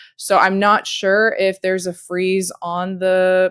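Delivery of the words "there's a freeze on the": ordinary talk, nothing marked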